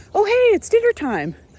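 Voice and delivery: high eager horse voice. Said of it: "came up to the barn with a lot of enthusiasm".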